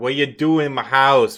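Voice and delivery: put-on big bear voice with a Boston accent. A player voicing a bear character speaks, in a Boston-accent bear voice. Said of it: "this bear's from Boston".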